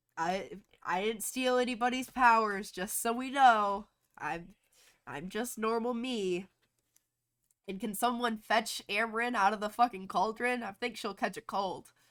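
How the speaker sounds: sarcastic throwaway remark. Retelling a scene where a man comes back to life and speaks: mock-sarcastic retelling. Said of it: "he he all sarcastic".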